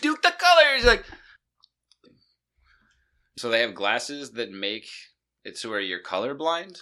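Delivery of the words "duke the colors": high, loud, freaked-out yell. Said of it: "this dude would be freaking out".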